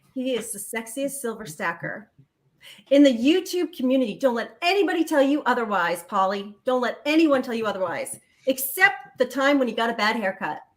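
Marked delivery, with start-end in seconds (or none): none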